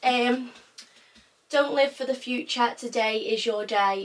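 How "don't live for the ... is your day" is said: ordinary talk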